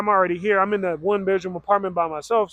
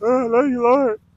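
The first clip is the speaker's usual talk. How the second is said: play-acted sobbing, weeping, high crying voice; 5 semitones higher, 4 dB louder than usual. Recounting a moment alone in the shower, she reenacts her own crying. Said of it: "I'm crying".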